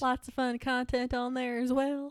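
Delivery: put-on Southern drawl accent. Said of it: "came out in a southern accent".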